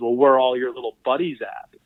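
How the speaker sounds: plain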